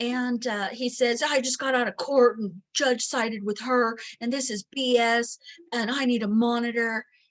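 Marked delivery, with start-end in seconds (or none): 1.2-7.0 gruff, macho, rough voice, angry. Recounting what a man said on a phone call, imitating a rough, gruff caller. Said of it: "very rough and gruff on the phone".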